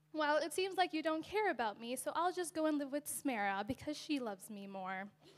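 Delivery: ordinary talk, nothing marked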